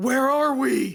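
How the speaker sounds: sudden, dead-serious, high, loud scream. Voicing a Kenku who suddenly screams at Remy: screaming in character. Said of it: "just screams out".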